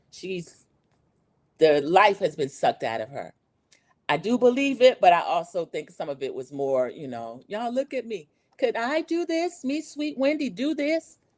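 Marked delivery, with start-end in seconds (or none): 7.4-11.1 sweet put-on innocent voice, pitched up, laid on thick. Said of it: "is this your innocent voice?".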